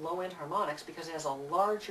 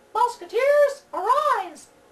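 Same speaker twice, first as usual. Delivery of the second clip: very high, very loud, clamped, piercing falsetto; 14 dB louder than usual. Showing what happens when you clamp the voice down: falsetto. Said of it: "if you clamp it down, then you end up with falsetto".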